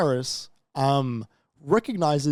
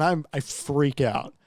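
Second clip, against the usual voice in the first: plain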